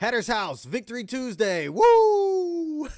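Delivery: very high, loud, long celebratory woo scream. Host announcing a team victory on the show, screaming into the mic. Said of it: "Sorry for screaming in the mic".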